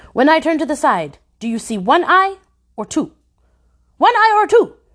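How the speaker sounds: sharp, high, cutting commanding voice. Questioning the girl who stays silent, in a sharp commanding voice. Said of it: "with that sharp voice that made heads twitch".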